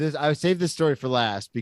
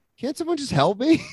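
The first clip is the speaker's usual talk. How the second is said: mock drunk-sounding voice, very high; 11 semitones higher than usual. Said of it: "I was drunk".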